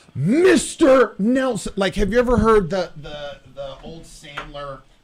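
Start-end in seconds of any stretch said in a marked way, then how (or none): 0.2-1.8 play-acted high, shouted, yelled retort. Retelling a phone argument with a debt collector: imitating a yell. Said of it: "Yelling back and forth".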